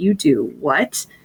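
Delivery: slow, drawn-out, fascinated, amazed disbelief. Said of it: "they're just always fascinated".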